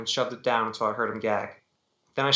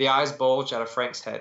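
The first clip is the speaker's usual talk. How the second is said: ordinary delivery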